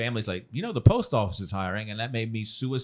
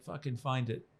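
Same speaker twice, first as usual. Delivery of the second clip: put-on British accent, higher and quieter; 3 semitones higher, 9 dB quieter than usual. Retelling what a British comedy club host said: British accent imitation. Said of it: "That's a great, great British accent".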